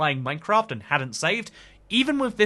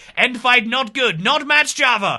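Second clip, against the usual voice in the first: bad put-on Russian accent, loud, high, horrific; 7 semitones higher, 6 dB louder than usual. Mocking a Politburo-style committee decision, in a horrific Russian accent. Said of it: "apologies for my horrific uh, Russian accent there".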